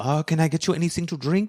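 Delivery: put-on French accent, waitress-style voice. Retelling a bar story, the speaker voices Antoine the waitress; French barmaid accent. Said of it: "That's my French accent".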